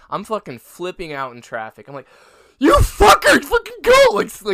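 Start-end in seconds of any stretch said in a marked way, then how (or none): 2.5-4.0 very loud, very high, shrill full-throated scream. Retelling driving late to class through city traffic: imitating his own screaming. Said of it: "screaming at everyone".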